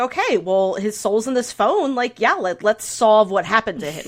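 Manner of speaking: plain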